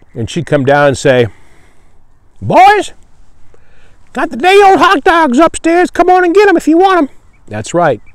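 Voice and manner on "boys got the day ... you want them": high-pitched put-on old-lady voice, calling out. Retelling what the concessions gal would call to the boys, imitating an old lady's voice. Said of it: "the concessions gal in Lynchburg had a voice like that".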